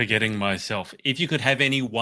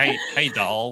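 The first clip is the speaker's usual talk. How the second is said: American southern states accent; 3 dB louder than usual. Showing how people in the southern states would say the word: southern accent. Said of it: "in a southern accent".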